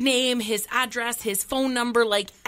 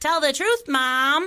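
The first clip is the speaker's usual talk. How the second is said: put-on young child voice, higher and louder; 4 semitones higher, 4 dB louder than usual. Retelling a traffic stop, imitating her five-year-old son. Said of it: "a little five-year-old beside me goes".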